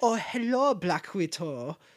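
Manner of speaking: put-on clumsy, slow German doctor accent. Retelling a movie scene from Civil War, imitating the German doctor's accent. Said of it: "I don't like his accent".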